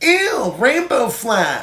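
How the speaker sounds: put-on very high small-child voice.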